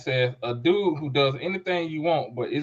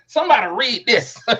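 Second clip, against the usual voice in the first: put-on high, raised, calling-out old lady voice; 8 semitones higher, 7 dB louder than usual. Retelling how an old church lady answers the pastor: imitating an old church lady. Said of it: "she sound like that old lady when the pastor say".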